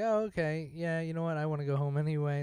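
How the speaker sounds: usual speaking voice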